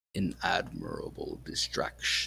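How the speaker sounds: gurgling, dark voice. Voicing the player's patron as the player is swallowed, in a dark, gurgling voice. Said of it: "its dark, gurgling voice reaches out to you and says".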